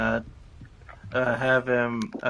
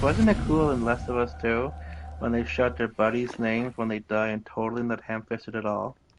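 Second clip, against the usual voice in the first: plain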